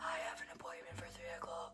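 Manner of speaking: very quiet, breathy, barely voiced whisper. Retelling reaching the desk unable to breathe, sounding like Carmen Winstead. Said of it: "I sounded like Carmen Winstead".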